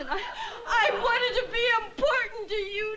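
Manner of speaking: sobbing, slowing down at the end. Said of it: "will you please stop crying".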